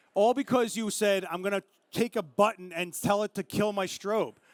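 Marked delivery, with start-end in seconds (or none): none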